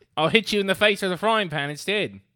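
very high, very loud, shrill botched Australian accent. Joking around after a line about an Australian accent: attempted Australian accent. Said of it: "That is not Australian at all".

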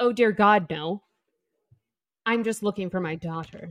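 put-on condescending mother voice. Retelling a book scene, voicing the mother insulting a salesperson: imitating Auden's mom, condescending. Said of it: "That's honestly how I imagine her talking".

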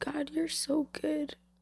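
overcome with emotion. Recounting a night of worship, the speaker is getting emotional. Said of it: "I'm so sorry, I'm getting emotional".

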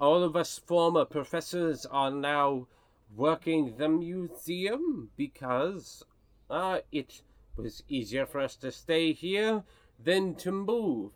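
put-on mixed French, Russian and German foreign accent. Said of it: "Whoa, where did Cassius Dupree come from?".

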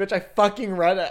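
play-acted, loud, snapping retort. Recalling a woman who said they didn't read it; retelling snapping back. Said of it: "I snapped back at her a lot".

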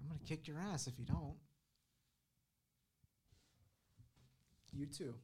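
playful, teasing, mock-menacing tone. Urging the others to watch the full video, a playful threat. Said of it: "you're threatening me".

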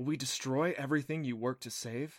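plain reading voice

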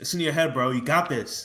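put-on bro voice. Recalling what people used to tell the speaker, Chad voice. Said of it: "this is my Chad voice".

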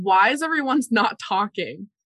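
speaking up plainly in a full, carrying voice. A player's character asks the silent, watchful locals a question, in a full voice. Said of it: "I say in a full voice".

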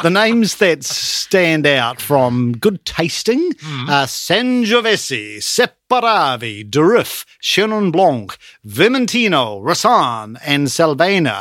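every word in an Italian accent. Listing favourite wine names to a conversation partner, in an Italian accent. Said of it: "you can put an Italian accent almost anything".

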